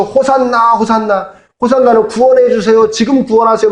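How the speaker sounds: many voices shouting loudly together.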